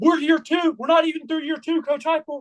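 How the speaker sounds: high, jeering, taunting holler. Recounting trolling at a game while everyone was silent, retelling a yell. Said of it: "and I'm yelling it".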